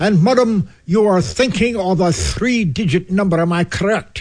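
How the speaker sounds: booming fake Oxford accent. Retelling how a man called to a woman from the next room, booming would-be Oxford accent. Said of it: "what he believed was an Oxfordian accent".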